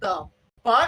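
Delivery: play-acted, freaked-out gut-reaction blurt. Retelling looking at a phone during a call: retelling own freaked-out reaction. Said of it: "I am freaking".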